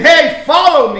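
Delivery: loud, hollered yell. Wondering aloud how Jesus said follow me to him, demonstrating yelling. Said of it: "Did he yell at him".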